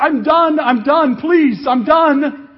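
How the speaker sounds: very loud, high, drawn-out pleading yell. Describing a friend clutching a parasail who starts yelling, imitating someone yelling. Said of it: "He starts yelling".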